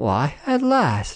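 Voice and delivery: happy, cheerful voice. The blue-eyed soldier speaks up in the dark, in a happy voice. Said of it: "the blue-eyed soldier's happy voice".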